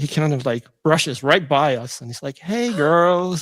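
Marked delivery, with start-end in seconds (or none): 2.4-3.4 put-on flirty, charming voice, pitched higher. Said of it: "he turns on this charm".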